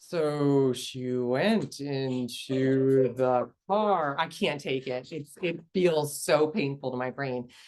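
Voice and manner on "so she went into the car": very slow, every word stretched out, dragging. Showing how audio sounds to her when turned down, the speaker uses very slow drawn-out speech. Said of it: "I turn it down and it sounds like they're like".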